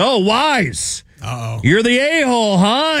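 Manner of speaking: acted very high hollering with Wise stretched out. Telling how a guy behind him read his jersey name, retelling a loud yell. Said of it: "he's yelling it so loud".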